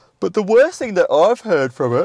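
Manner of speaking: speaking through a yawn. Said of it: "sorry for my yawn".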